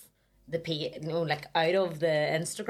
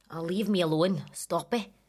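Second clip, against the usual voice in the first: doing a put-on Scottish accent. Asked by the other speaker to try Scottish, doing a Scottish accent. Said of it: "That's good".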